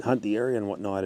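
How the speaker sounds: ordinary talk, nothing marked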